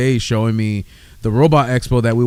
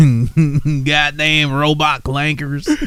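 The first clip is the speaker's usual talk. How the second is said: put-on country accent; 4 semitones higher than usual. Joking around, practicing a country accent. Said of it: "I'm practicing my country accent".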